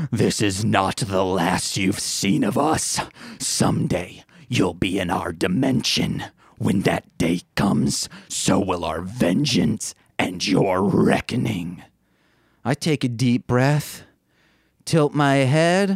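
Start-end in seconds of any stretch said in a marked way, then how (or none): 0.1-11.8 very low, growled demonic voice. Retelling what two figures belted out while staring the speaker down: demonic growl. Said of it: "in a demonic growl".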